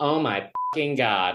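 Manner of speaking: camp, very effeminate outburst. Retelling how a guy in the back interrupted near the punchline: imitating an effeminate voice. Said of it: "this like very effeminate voice".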